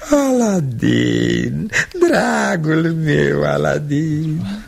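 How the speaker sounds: slow, drawn-out fake sobbing. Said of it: "De ce plângi?".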